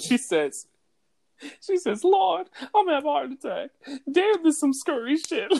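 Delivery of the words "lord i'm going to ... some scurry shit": put-on scream, much higher pitch. Retelling how Brenda reacted while watching a movie, imitating Brenda screaming in fright. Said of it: "Brenda's screaming like it was Saw".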